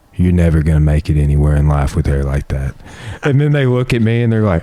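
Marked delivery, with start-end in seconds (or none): none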